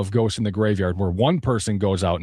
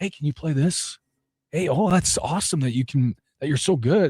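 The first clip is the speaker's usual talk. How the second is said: put-on high, admiring, gushing girl voice; 6 semitones higher than usual. Imitating girls admiring a guitar player on the couch: imitating admiring girls.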